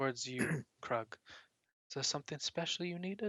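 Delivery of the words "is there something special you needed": hushed whisper, slightly higher pitch. Voicing a priest speaking to Krug near the temple, whispering. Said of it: "the priest whispers".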